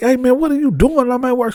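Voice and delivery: very high, tearful sobbing, pleading tone. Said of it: "he come from crying like".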